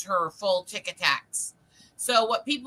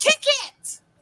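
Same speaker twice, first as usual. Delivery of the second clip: play-acted, loud, very high yell; 5 dB louder than usual. Retelling a camp story where someone in the front row yells: imitating someone yelling. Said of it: "you hear somebody in the front row yell".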